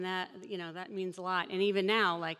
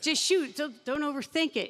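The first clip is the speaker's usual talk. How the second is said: mock shout, higher and louder; 8 semitones higher, 5 dB louder than usual. Retelling how a rebounder hurried a free-throw shooter: imitating someone shouting. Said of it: "he's shouting".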